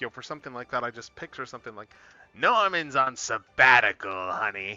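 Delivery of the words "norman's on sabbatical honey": loud, very slow, drawn-out cartoon goblin voice. Picturing what a goblin voice would say: Green Goblin voice. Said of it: "goblin voice".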